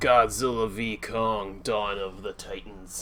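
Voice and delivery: tired, weary voice. Speaker opens a recap of the Godzilla and Kong films, tired. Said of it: "If I sound tired".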